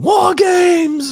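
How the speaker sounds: shrill, very high, loud scream. Imitating Regal screaming after another speaker says war: imitating Regal screaming. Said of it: "I love that shit when he screams it".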